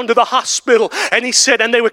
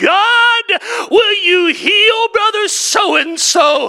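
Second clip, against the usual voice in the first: mock sobbing, weeping, pleading tone, much higher pitch; 10 semitones higher than usual. Retelling how a frail man wept and prayed over him: retelling a sobbing plea. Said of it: "And in between the sobs".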